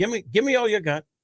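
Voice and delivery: Irish brogue, pitched very high. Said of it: "he always did an Irish".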